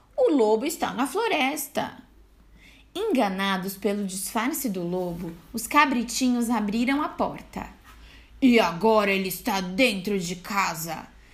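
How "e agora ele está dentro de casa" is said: gleeful exclaiming in a much lower, deep voice. [name], playing the wolf in a game, exclaims gleefully in a deep voice. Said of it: "exclamou alegremente [name], com a sua voz grossa".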